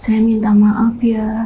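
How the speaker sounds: put-on elderly grandmother voice. Retelling a possessed girl speaking in another voice: old woman's voice. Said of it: "yang keluar suara nenek-nenek".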